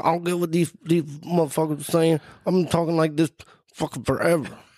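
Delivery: high, careless tough street talk. Retelling an interview answer: imitating Nate Diaz. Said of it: "people think you talk like this".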